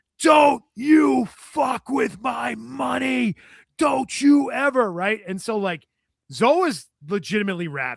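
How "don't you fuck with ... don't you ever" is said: high, very slow, dragged-out, furious scream. Retelling how a man screamed in Zoe's face, retelling a scream. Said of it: "he's just screaming at him".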